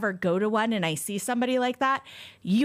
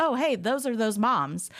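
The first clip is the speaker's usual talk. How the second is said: imitated indifferent, casual voice; 3 semitones higher than usual. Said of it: "they're so blasé about it".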